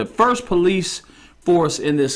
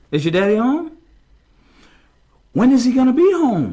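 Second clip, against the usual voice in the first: sweet, gentle, kind, friendly, pitched-up coaxing voice; 9 semitones higher, 4 dB louder than usual. Acting out a man trying to get into the house by talking to her; imitating a soft, kind voice. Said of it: "with a very soft, kind voice".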